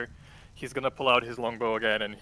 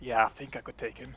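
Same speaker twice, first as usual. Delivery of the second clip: acted whisper. Voicing a character stepping back to whisper to Tio: in-character whisper. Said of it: "I'm gonna whisper to him".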